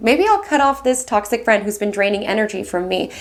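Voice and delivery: ordinary delivery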